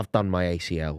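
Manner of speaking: grave, low, very slow, dead serious deadpan. Retelling a teammate's excuse after conceding goals: imitating someone saying it seriously. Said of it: "he went really seriously".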